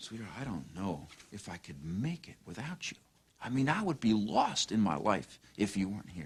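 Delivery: soft, gentle, heartfelt and passionate. Showing different ways to say a line: soft and passionate. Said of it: "Soft and passionate".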